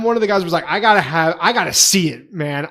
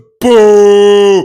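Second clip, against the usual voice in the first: put-on spooky cartoon ghost voice, higher and louder; 4 semitones higher, 12 dB louder than usual. Retelling a keyboard voice prank: ghost voice like Scooby-Doo. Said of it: "like a stupid ghost from Scooby-Doo".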